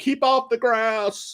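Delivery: put-on old man's slow, drawn-out yell. Mocking this guy by likening him to an old man, imitating an old man yelling. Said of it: "he's like an old man yelling".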